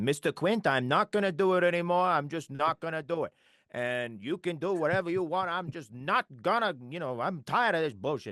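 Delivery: put-on old-film actor voice, eastern flair. Imitating the original actor's Herschel addressing Mister Quint: fifties actor voice with Eastern flair. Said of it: "very Eastern flair to it".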